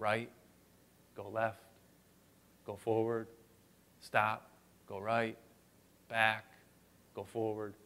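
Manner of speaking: very soft half-whisper close to the ear. Retelling guiding a kid through shouting kids: imitating own half-whisper. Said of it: "I whispered into his ear".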